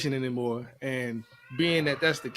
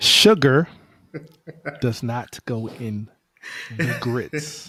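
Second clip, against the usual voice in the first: loud, slow, emphatic, deliberate word by word; 7 dB louder than usual. Repeating a claim about grits into the camera, louder and slower. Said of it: "let me say it a little louder and slower".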